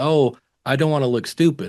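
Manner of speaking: ordinary talk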